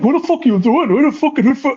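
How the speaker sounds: furious, angry cursing outburst. Retelling a wrestler's reply, imitating him cursing angrily. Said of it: "he started, like, cursing".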